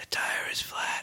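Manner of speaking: creepy, slow, very quiet, barely-there whisper. Retelling a creepy story, the voice repeating from the houses: imitating a whisper. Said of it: "they'd hear a whisper".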